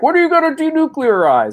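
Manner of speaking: acted-out shrill, very high, loud yell. Retelling a reporter yelling a question at a meeting: imitating Jim Acosta yelling. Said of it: "and he yells out".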